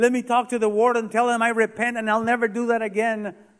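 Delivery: acted-out yell. Telling of a crying prisoner calling to the guard: retelling a prisoner's yell. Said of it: "he'd yell".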